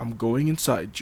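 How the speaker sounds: plain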